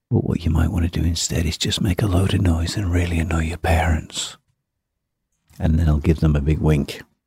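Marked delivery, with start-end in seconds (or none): 0.1-4.4 sly, low, hushed, conspiratorial voice. Showing how they give a young student advice not to practice: dropped voice. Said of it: "I'll kind of drop my voice and go".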